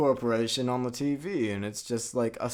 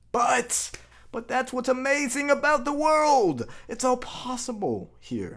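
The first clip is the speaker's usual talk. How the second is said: high, wide-eyed, goofy, rapturous gushing hero voice. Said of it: "He's like".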